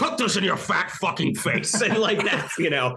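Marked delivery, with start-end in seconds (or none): 0.0-1.8 celebrity-style commercial voiceover voice. Imagining how a McDonald's commercial should sound: Brian Cox voice as Logan Roy. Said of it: "it should be a commercial where he's like".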